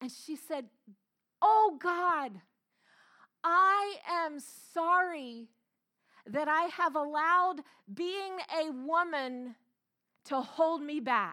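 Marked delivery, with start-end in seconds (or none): 1.4-11.3 loud, high, very slow cry at full voice. Retelling an aunt's prayer in a church service: imitating her crying out loudly. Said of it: "she cried out at the top of her voice".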